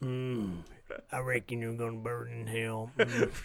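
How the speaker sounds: low, slow, dragged-out drawl. Playing a character in a game, doing Sling Blade voice. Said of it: "I'll just keep doing the".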